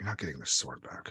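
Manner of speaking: barely audible whispered mutter under the breath. Narrating a scene, voicing a character who stares at another, muttering under breath. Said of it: "barely under her breath is like".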